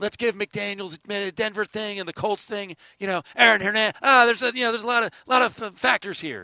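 high, mocking, mock-reasonable impression.

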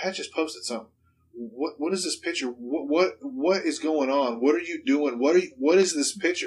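put-on hysterical, frantic panicked voice. Retelling a mother's frantic phone call about a posted picture: imitating someone hysterical.

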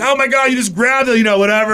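put-on cracking up mid-sentence, hysterical laughter. Retelling a story, quoting their past self to a guy who grabbed it; retelling hysterical laughing. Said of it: "laughing hysterically".

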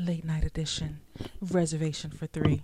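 put-on sultry, sexy late-night host voice. Host opening the show's late-night edition, putting on a sexy late-night voice. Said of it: "I should put like my sexy voice on".

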